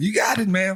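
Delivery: put-on very high-pitched New York taxi-driver voice with New York accent. Redoing the line "you got it" like a New York taxi driver. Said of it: "Like a New York taxi driver".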